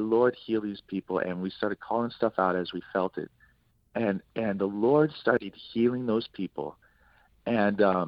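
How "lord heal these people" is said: usual speaking voice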